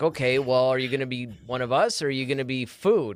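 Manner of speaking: normal talking voice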